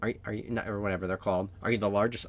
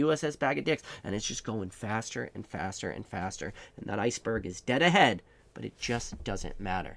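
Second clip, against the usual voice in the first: ordinary delivery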